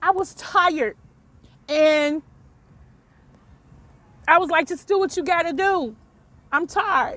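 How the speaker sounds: choked voice, fighting off crying, holding back tears. Telling an audience how he gave up fighting, holding back tears. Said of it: "try not to cry".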